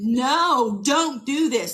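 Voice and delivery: put-on contained cry, no stretched out and held. Retelling pleading with a partner who ordered her out: imitating her own scream. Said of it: "I'm just screaming".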